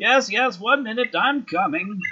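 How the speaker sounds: put-on muffled old man voice. A narrator voices an elderly halfling answering a knock through the door: old codger voice, muffled. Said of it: "a sort of old codger's voice ring, muted through the door".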